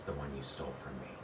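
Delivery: low, soft, menacing voice.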